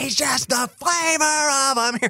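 re-enacted scream. Speaker recounts recording vocals and re-enacts the line; retelling own screaming. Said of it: "I was just screaming".

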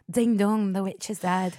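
put-on Irish accent. Showing another speaker how an Irish accent sounds: Irish accent. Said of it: "how do you Irish accent?".

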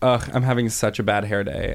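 plain

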